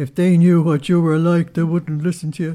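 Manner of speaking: loud, guttural demonic voice.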